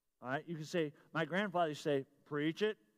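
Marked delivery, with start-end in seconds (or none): 2.3-2.8 small, low voice. Telling listeners what they can say, quoting a grandfather in a little low voice. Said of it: "little low voice".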